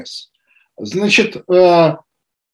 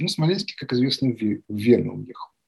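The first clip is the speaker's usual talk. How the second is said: normal talking voice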